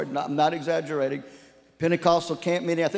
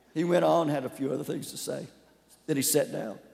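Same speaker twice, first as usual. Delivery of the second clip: ordinary talk, nothing marked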